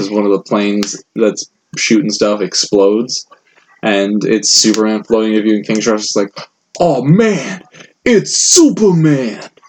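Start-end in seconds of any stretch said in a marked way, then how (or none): 6.8-9.4 very slow, high, swooping, excited fanboy voice. Describing a movie scene where Superman floats into view: imitating King Shark's excitement. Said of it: "he's a little fanboy for him".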